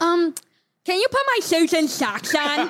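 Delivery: imitated, put-on, mock lisping speech. Telling how their niece talks, imitating her lisp. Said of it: "she has a lisp".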